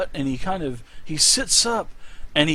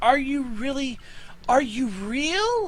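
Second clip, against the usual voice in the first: trembling, quavering, high voice, "real" drawn out; 9 semitones higher than usual. Game master voicing a character reaching out his hand to the player, very shaky voice. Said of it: "And his voice is very shaky".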